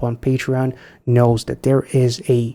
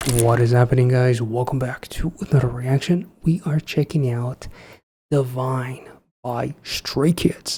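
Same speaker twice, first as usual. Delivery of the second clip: fake low-register, deep voice; 4 dB quieter than usual. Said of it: "I don't know why I'm doing a deep voice".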